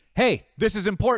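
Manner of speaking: forceful, very loud, high commanding bark. Describing subduing a customer ready to attack, the speaker retells a strong command. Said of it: "strong commands".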